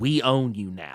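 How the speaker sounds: whispered line. Retelling how she leaned in at the last press conference, whispering. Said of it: "she like whispers".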